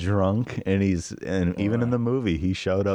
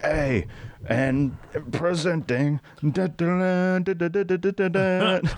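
put-on very high, very slow, drawn-out drunken announcing; 9 semitones higher than usual. Retelling a movie scene, imitating drunk Pip the Troll. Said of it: "he's all drunk and shit".

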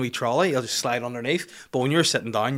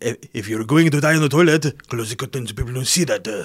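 put-on Welsh accent; 4 dB louder than usual. Describing what the japanese do, in a welsh accent. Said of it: "that's my Welsh impersonation".

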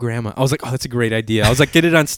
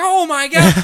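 very high, put-on, totally freaked-out cry; 4 dB louder than usual. Speaker retells her reaction when he pulls out a huge bass: retelling her freaking out. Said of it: "Like freaking out".

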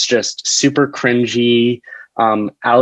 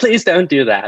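put-on old British man voice, pitched higher; 4 semitones higher than usual. A sketch writer imagines what a piano teacher would say, in an old British man voice. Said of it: "he's this British old".

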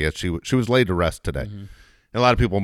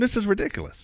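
put-on angry, pissed-off outburst; 3 dB quieter than usual. Recalling hearing a friend's story of racism: retelling an angry outburst. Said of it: "I was so fucking pissed".

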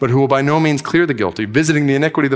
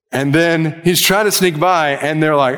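plain

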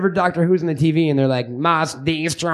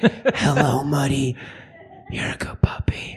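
strange, weird, breathy voice; 3 semitones lower, 4 dB quieter than usual. A dog owner shows how he talks to his dog at home, in a weird voice. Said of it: "and you do that weird voice".

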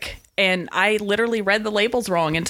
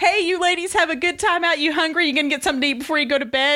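bright, bouncy, chipper, pitched-up cheer; 8 semitones higher than usual. Retelling how a room service guy greeted the ladies, imitating a chipper room service guy. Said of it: "chipper room service guy".

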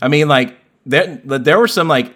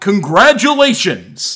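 big, high, swooping video game announcer voice; 7 semitones higher than usual. Imitating the game's call after beating Classic Mode: Super Smash Bros. announcer voice. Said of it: "That's a pretty good impression".

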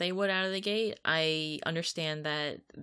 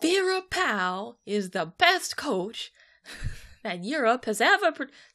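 loud, high, emphatic belted TV pundit rant; 7 semitones higher, 6 dB louder than usual. In the middle of a soccer discussion, slipping into a Stephen A. Smith impression. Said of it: "it became Stephen A. Smith time".

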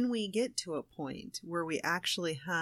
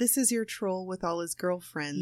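usual speaking voice

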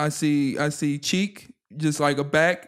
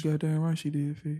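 mock sexy voice, quieter; 6 dB quieter than usual. Agreeing with the storyteller mid-story, still in a mock sexy voice. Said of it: "I still got my sexy voice on".

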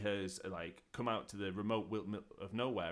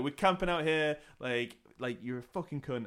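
mock aggressive girl voice, higher and louder; 5 semitones higher, 4 dB louder than usual. Retelling how teenage girls hiking answered a patrolman: imitating aggressive girls. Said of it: "these girls are surprisingly aggressive".

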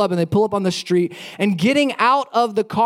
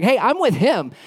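put-on heavy, full-on teenage angst and attitude; 2 semitones higher than usual. Retelling the reply to a Capitol police officer who stopped the speaker, with put-on teenage angst. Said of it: "with as much like 16-year-old angst as I could".

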